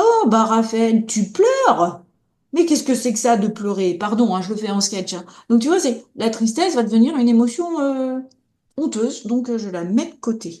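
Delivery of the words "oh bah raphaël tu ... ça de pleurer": sneering, scornful, belittling, contemptuous tone. Speaker acts out a past remark to raphaël for crying, acting out a contemptuous remark. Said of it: "c'est une forme de mépris".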